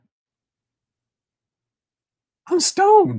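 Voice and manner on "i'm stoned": put-on very high, loud, stoned-sounding exclamation. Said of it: "all of a sudden I went".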